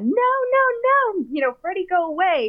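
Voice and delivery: mock very high, terrified screaming with drawn-out "no's". Recalling being scared of Freddy as a child, the speaker acts out screaming, retelling a childhood scream. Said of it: "And I start screaming and hitting my dad".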